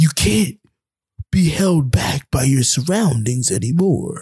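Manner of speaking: airy, otherworldly, ethereal narrator voice. Retelling an Instagram video's voiceover while someone drives: imitating an ethereal voice. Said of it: "this random ethereal voice is like".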